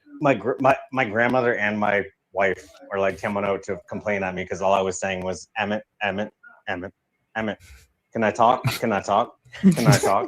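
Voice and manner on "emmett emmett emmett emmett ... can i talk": normal talking voice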